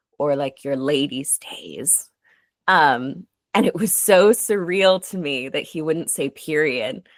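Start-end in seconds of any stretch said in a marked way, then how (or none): 0.2-2.1 discreet, hushed murmur in a lowered voice. Retelling what a doctor said during an exam: imitating a doctor lowering his voice. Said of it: "lowered his voice and he went".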